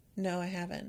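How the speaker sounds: very deadpan, flat, expressionless delivery. Retelling a character's reply to a question about retirement: imitating a deadpan reply. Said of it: "in this very deadpan way".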